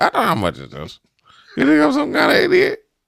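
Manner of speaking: very high, squeaky, creaky, raspy voice swooping up and down. Acting out someone counting money in a bit: imitating Beetlejuice. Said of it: "He'd be like".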